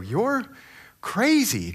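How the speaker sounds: high, amazed voice.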